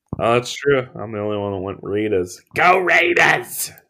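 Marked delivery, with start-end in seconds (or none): 2.6-3.7 high, pitched-up put-on cheering. Cheering for the one pick that differs from the others: Chris Berman voice.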